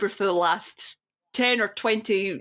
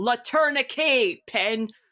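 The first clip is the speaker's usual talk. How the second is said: put-on loud megaphone voice, higher; 3 semitones higher than usual. Retelling the silent performer suddenly speaking through a megaphone: imitating Teller through a megaphone. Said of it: "pulls out a megaphone from his jacket pocket and goes".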